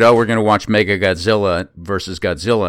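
ordinary delivery

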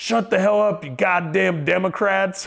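play-acted, high, angry shouted scolding. Retelling what a guy yelled at them for being loud, imitating a yell. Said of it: "the guy yells again".

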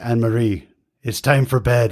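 imitated booming, deep put-on voice. Recalling a friend's father ending their late phone calls, imitating a booming, deep voice. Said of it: "he had this booming, deep voice".

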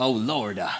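Southern preacher voice, "Lord" stretched with extra syllable. Describing how American South speech adds syllables: Southern preacher voice, extra syllables. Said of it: "a preacher voice that kind of enunciates everything... you just add an extra syllable at the end of everything".

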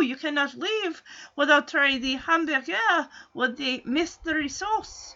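soft, coaxing, insistent put-on French accent. Speaker retells what Punky said to a man leaving, in Punky's put-on French accent. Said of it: "As she puts on this French accent".

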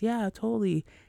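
bright happy-go-lucky voice. Showing how she normally sounds when acting happy: happy-go-lucky tone. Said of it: "I'm talking like this".

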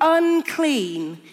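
high-pitched loud shouting.

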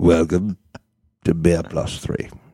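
put-on drunk English actor voice. Doing the podcast intro as an impression: drunk Michael Caine impression. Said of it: "drunk Michael Caine".

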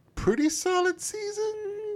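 marked, very high, slow, wailing inflection.

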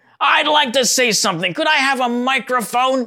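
high-pitched, shrill, harsh, angry squawking. Speaker recalling the lady who sent him love letters, imitating Helen's squawking angry voice. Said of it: "this squawking type of angry voice".

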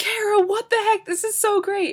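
very high, gushing, excited shriek. Retelling a roommate's reaction to a music video: imitating roommate screaming.

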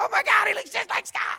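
very high, very loud, shrill, rough scream. Retelling how mom screamed from across the room: imitating mom screaming. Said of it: "she's screaming".

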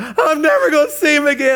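put-on screaming. Retelling a grieving man on a plane, imitating loud screaming. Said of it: "he's screaming loud".

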